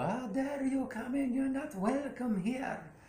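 high-pitched, crazy, going-off ranting.

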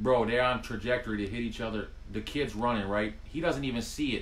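ordinary delivery

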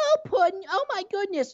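very high, squeaky, ditzy, airheaded sweet voice. Describing a cartoon character around the Joker: imitating airheaded Harley Quinn. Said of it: "this airhead around Joker".

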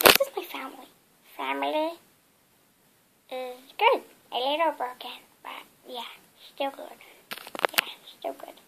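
whispered, breathy cartoon alien voice. Doing a second Disney character quote for a YouTube video: Stitch impression. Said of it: "And I've got another one".

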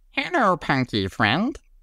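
very high, squeaking cartoon critter voice. Recalling a cartoon character's greeting from childhood, doing the Glomer voice. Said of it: "the way the Glomer would say is like".

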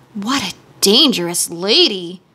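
gentle, soft murmured speech. Reading the Scarecrow commenting on the angry princess, in a soft murmur. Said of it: "murmured the scarecrow in a soft voice".

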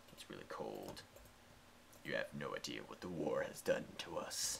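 very soft, deep, breathy put-on whisper. While building, the speaker jokingly delivers a line: put-on deep voice. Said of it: "I sound really deep voice right now".

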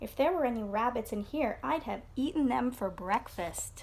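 ordinary delivery, nothing marked

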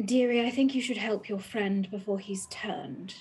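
whispering. In a game, a player character whispers down to the cat in their arms: whispering. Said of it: "I'm going to whisper down to Morris".

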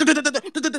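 mocking, high duh-duh babble, put-on.

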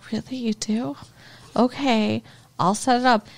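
mock sorrowful tone. Retelling a show scene where a character answers: imitating a sad reply. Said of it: "so sad".

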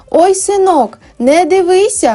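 stretched high exclamation. An old woman in a crowd answers Sashko's question; exclaiming. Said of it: "вигукнула та".

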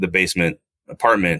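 ordinary delivery

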